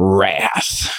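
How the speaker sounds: deep, drawn-out, wrathful Southern preacher voice. Quoting a bible verse on an episode, 'wrath' like a southern preacher. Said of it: "It's the deep Southern preacher in me".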